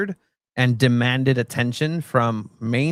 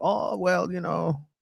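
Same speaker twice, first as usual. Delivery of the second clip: put-on slow German accent, pitched up; 5 semitones higher, 6 dB quieter than usual. Retelling an interview answer from Thomas Tuchel: Thomas Tuchel German accent. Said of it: "German accent".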